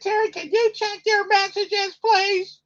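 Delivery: put-on woman's voice, very high-pitched. Doing his wife's voice on one of his podcasts, imitating his wife's voice. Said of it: "I'm doing it in my wife's voice".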